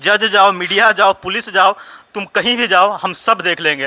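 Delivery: ordinary talk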